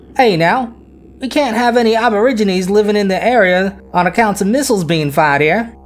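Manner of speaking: put-on best-effort high Australian accent. Retelling what the Australian government said, in my Australian accent. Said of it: "That's my Australian accent".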